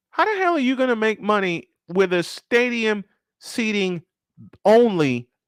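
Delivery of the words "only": "only" stressed, much higher in pitch. Speaker questioning a stadium that seats thirty thousand, stressing the word only. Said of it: "and I stress the word only".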